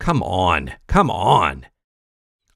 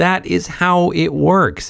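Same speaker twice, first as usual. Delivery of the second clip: slow, high, patronizing talking-down voice. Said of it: "as if to a child".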